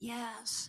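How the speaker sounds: barely audible, faint, very quiet whisper. Telling a joke where a very sick patient answers the doctor: retelling a faint whisper. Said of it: "he barely says with a whisper".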